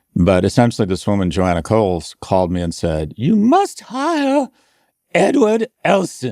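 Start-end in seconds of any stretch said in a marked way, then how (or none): 3.2-6.4 British woman's voice, very high, slow, swooping, sing-song. Retelling what Joanna Coles said when she called him, imitating Joanna Coles, British. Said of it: "That's my British, my woman's British impersonation".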